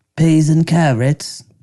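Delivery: bad fake English accent. Trying out an accent with others, the speaker uses a put-on English accent. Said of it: "I sound like a, an Englishman".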